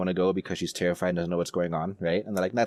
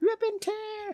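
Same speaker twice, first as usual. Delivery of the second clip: very high, squeaky voice. Suggesting a joke voice for a series character: high-pitched voice. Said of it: "Or just this high pitched voice".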